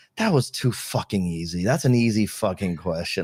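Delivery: confiding, hushed stage whisper, close to the ear. Retelling what someone half-whispered in the speaker's ear: imitating a half-whisper. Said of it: "he literally whispers to my ear".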